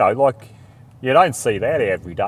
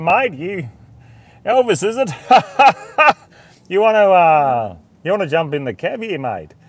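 high, called-out shouting yell; 7 semitones higher, 5 dB louder than usual. Retelling calling out from the cab door to a hitchhiker: retelling a yell. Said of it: "I yelled out".

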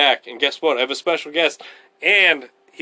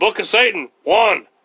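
put-on hyped-up ranting voice, higher and louder; 5 semitones higher, 4 dB louder than usual. Reading a passage aloud on a podcast: Alex Jones voice. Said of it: "Why are you doing your Alex Jones voice?".

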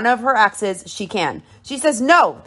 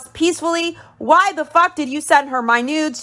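screaming at the top of her lungs, high; 6 semitones higher than usual. Retelling a reality show argument, imitating Jasmine yelling. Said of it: "She yells".

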